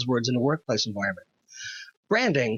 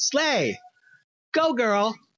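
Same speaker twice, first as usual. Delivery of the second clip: high, emphatic slang cheer. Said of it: "I will shout in all caps".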